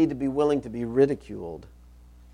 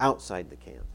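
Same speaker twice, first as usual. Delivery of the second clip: outside stressed, then pitch falls low. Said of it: "I kinda emphasize the word outside".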